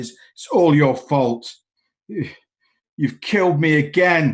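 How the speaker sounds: imitated shouting. Describing a man with a sour expression who shouts blame, retelling a shout. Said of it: "he shouts like".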